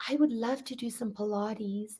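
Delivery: soft, very timid, shy little voice. Retelling a young woman asking at the front desk: imitating a timid voice. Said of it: "in a very timid voice".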